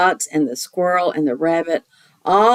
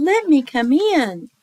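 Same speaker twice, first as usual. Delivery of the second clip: put-on teeny tiny, high, small mouse voice; 8 semitones higher than usual. Reading a story aloud, voicing the little mouse in a teeny tiny mouse voice. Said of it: "said the little mouse in a teeny tiny voice".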